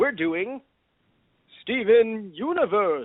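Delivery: put-on cartoon old-professor character voice. Podcast host opening the episode; Professor Farnsworth voice. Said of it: "Why did you do that in like a fucking Gravity Falls voice?".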